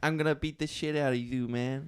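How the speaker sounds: put-on high lisping childlike voice. Explaining why things not meant to be scary are scarier: Mike Tyson impression with a lisp. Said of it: "he talks like that, and he's like".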